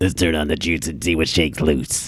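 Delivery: low, throat-straining put-on character voice. Repeating the line for a doubtful listener, in a Michael Keaton impression. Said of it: "Now that you said it like that".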